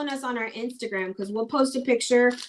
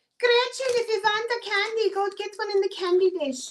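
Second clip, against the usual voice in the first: put-on very high-pitched, old-time granny voice; 10 semitones higher than usual. Acting out an old lady offering candy: imitating Grandma Babe. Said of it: "she says it like that 'cause that's literally how her grandma talked".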